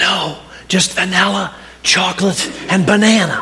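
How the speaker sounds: very raspy, hoarse, croaky voice. Telling a joke, voicing the ice-cream server's reply, imitating a very raspy voice. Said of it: "in a very raspy voice".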